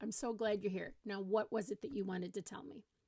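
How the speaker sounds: ordinary delivery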